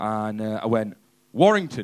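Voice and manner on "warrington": mock proud tone, full of pride. Retelling answering a lad after a gig: imitating saying it proudly. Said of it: "quite proudly".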